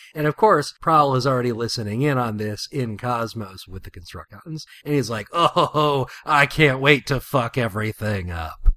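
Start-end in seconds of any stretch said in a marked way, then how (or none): 5.3-8.5 every word dragged out slowly. Retelling a comic scene where Prowl listens in: Prowl impression. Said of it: "That's my Prowl impression".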